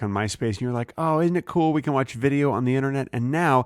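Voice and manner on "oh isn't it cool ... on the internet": ordinary talk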